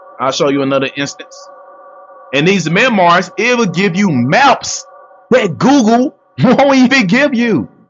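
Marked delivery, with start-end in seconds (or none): 2.4-7.7 loud, slow, rising raised voice. Thanking viewers for gifts, then carrying on talking to them, loud. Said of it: "I know I sound real loud in the mic".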